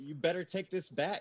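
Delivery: put-on high screaming. Retelling screaming at him to take the ball back: retelling a scream. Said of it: "I was screaming at him".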